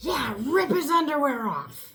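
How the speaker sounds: mock yelling at full volume. Retelling hearing someone yell from another room: imitating Sam yelling at top of lungs. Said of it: "I hear Sam yelling at the top of his lungs".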